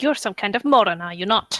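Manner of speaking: furious, cross, very angry tone. Voicing a character who reacts to a player's wink, very angry. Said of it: "frown very angrily and go".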